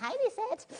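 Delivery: shrill, very high, screechy voice. Mimicking the listener's question, in a screechy voice. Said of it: "We might not say it in such a screechy voice".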